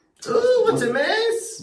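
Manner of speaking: put-on very high, drawn-out voice with a Scottish accent. Trying to do a Scottish cleaner, sounding like McGonagall. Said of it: "That's McGonagall".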